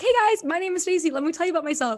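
peppy, bubbly voice. Speaker imitates how they introduce themselves in a breakout room, imitating own hyper bubbly intro. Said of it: "like hyper bubbly person".

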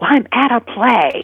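high, slow stage whisper. Retelling a woman answering her phone during a quiet play: imitating a loud whisper. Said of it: "she's whispering really loudly".

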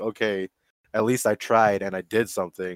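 ordinary delivery

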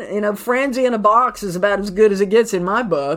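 ordinary talk, nothing marked

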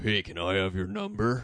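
very low, dropped-down character voice. Improvising a scene with the mayor's wife, speaking in a different Grinch voice. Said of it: "I'm going to try a different Grinch voice this time".

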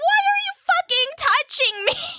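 all-out acted screaming. Recounting the moment the science teacher stood overhead: retelling her own screaming. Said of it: "And I just like was like just screaming".

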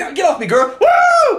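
very high, loud, all-fired-up hyped whoop. Retelling seeing Cap lift the hammer while his lady tries to console him: retelling being all hyped. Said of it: "I'm all hyped".

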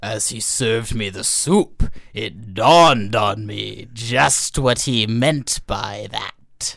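slow, low, somewhat scary storyteller voice.

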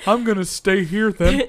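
put-on old dog character voice. Joking with friends, acting out being an old rescue dog. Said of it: "Why are you an old rescue dog?".

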